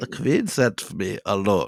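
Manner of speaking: put-on German accent. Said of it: "imagine this in a thick German accent".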